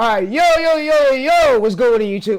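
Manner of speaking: shouting. Opening a youtube video and greeting viewers while yelling. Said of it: "Sorry for yelling".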